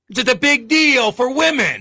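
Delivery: Italian-American accented voice. Hosts discussing a women's league, one slips into a sudden Italian-American accent. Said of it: "Why did you become Italian all of a".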